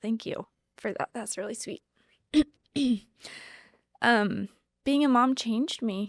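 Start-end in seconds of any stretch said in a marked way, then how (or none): 0.0-1.8 soft, rushed, breathy near-whisper, getting emotional. Guest thanking the interviewer for calling her amazing, getting emotional. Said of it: "I'm like getting emotional".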